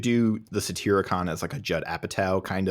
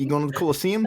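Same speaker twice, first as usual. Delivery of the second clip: everyday New Zealand accent, pitched up; 8 semitones higher than usual. Imagining a Rome period film where everyone speaks with a New Zealand accent. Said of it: "everyone just has a New Zealand accent".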